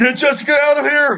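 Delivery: high-pitched screaming. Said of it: "I will scream to Greco".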